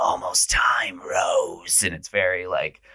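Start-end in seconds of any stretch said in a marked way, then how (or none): 0.0-1.8 scary, horror-movie style demon voice. Retelling a horror scene as the demon approaches her, in a demon voice. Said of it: "he does that very demon voice and says".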